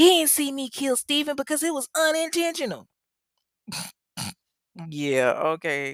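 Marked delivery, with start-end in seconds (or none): 0.0-2.9 very high, loud protesting outburst. Retelling what Michelle blurted out in a story, imitating Michelle's loud outburst. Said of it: "lets out this loud outburst".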